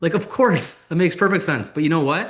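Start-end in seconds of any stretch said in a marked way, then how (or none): 0.1-1.7 optimistic, certain, joyful, bright, confident, pitched-up energy. Answering someone who stalls a sale: optimistic, confident energy. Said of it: "optimistic, joyful, happy, certain, confident energy".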